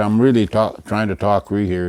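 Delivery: ordinary talk, nothing marked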